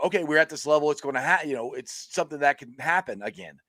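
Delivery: ordinary talk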